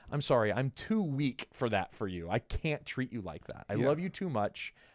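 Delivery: ordinary delivery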